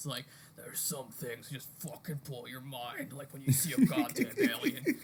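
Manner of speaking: gravelly, gritty narrator voiceover voice. Describing a documentary's voiceover, speaker imitates it in a gravelly Mickey Rourke voice. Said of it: "Like this gravelly voice".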